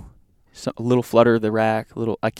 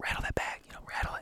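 acted-out whisper, much quieter. Up in a tree stand, telling the man below what to do, retelling a whisper. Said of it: "And I'm like whispering to him".

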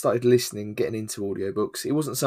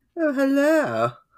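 put-on posh woman's voice, very high. Showing listeners what their female voice would be: posh female voice. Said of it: "My female voice would probably be quite posh".

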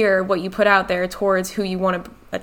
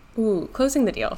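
ordinary delivery

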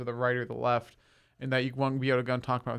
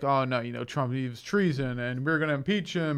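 put-on condescending talk-show host tone. Retelling a TV interview, imitating Bill Maher condescendingly. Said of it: "He's just so condescending to him".

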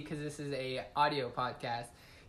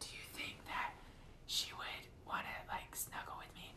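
soft, breathy, secretive whisper. Retelling walking up to someone's girlfriend to ask a question, retelling a whisper. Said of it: "I like whispered".

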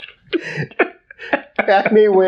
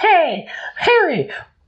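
very high-pitched cartoon mouse voice. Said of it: "He's gonna".

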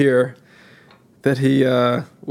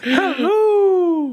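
very high, laughing put-on nanny voice. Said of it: "do your Missus Doubtfire again".

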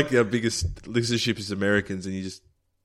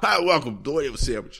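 American-accented speech; 5 semitones higher than usual. Host performs an accent for a co-host to guess: American accent.

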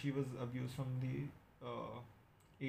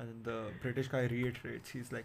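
plain

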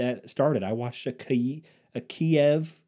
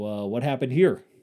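self-satisfied, knowing, very smug tone. Recounting what they asked on finding the fallen curtain rod, in a smug tone. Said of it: "In my very smug tone".

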